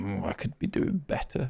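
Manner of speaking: mock, put-on upset-sounding voice. Imitating a player who seems upset even when winning: mock upset voice. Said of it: "He's got this permanent face of".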